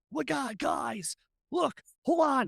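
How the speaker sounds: hyped-up, pumped up, bursting with excitement. Speaker retells someone's reaction while tracking a possible kidnapping caller, retelling an excited outburst. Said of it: "now Marshall's a superhero. He's all up".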